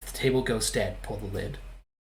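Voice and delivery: secretive, hushed, conspiratorial half-whisper. Retelling what the floor said while walking by the table: imitating a conspiratorial half-whisper. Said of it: "conspiratorially whispers in my ear".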